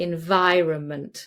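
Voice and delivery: environment with heavy stress on vi. Explaining how to pronounce long words: stress on vi in environment. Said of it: "it's vi".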